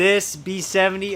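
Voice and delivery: ordinary talk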